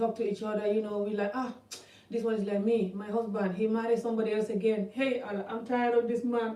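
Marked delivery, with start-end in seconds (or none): 1.3-6.6 crying, weepy, tearful, complaining tone. Retelling how women talk over tea about their husbands: imitating a woman crying. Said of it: "And they're crying".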